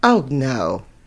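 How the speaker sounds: disdainful, dripping with scorn. Answering whether they have ever had one: disdainful. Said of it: "You said that with such disdain".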